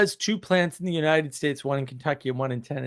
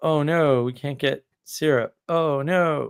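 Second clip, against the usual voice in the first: mock sarcastic tone. Imitating someone else's complaint, sarcastically: imitating someone sarcastically.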